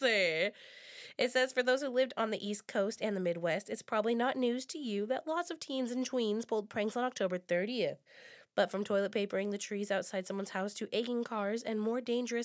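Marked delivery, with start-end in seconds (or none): none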